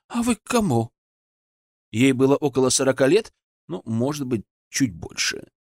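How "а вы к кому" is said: startled, scared, pitched-up delivery. A woman opens her door and sees the narrator there; frightened. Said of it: "испуганно сказала женщина".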